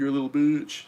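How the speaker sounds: put-on loud, dismissive older-brother voice. Telling the audience what his older brother would say, imitating his older brother. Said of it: "Exactly in that voice".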